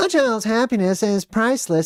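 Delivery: squeaky-high newsreader voice, like reading a teleprompter. Mocking news people as actors reading teleprompters, quoting one: mocking news-anchor voice. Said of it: "who even talks like that?".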